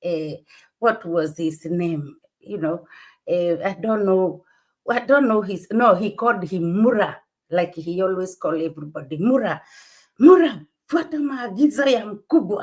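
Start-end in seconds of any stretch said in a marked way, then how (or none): 10.2-12.6 bossy, high-pitched, loud shouting. Retelling how a guest shouted orders at a man called Mura: imitating Marwa shouting. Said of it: "Marwa went like shouting to one guy".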